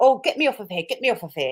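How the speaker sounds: play-acted frightened, exasperated, begging tone. Retelling what a man said when he couldn't answer simple questions: mock-scared and fed up. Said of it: "Tricky got so like scared and fed up".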